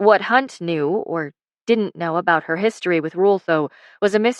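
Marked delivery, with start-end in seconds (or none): none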